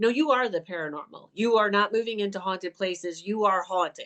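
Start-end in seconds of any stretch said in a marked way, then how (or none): none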